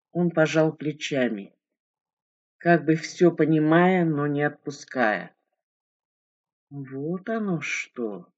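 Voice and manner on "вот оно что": soft, pensive, musing, thoughtful voice. The narrator answering a man, thoughtful. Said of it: "задумчиво ответила я".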